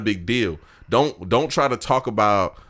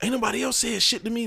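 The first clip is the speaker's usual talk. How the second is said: mock snapping tone, much quieter; 4 dB quieter than usual. Retelling an argument, the speaker voices the girl's reply: imitating her snapping. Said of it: "she started snapping".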